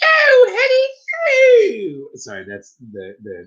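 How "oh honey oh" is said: very high, swooping sing-song voice, honey drawn out. Riffing with friends, suddenly breaking into a Mrs. Doubtfire voice. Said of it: "y'all remember Miss Doubtfire".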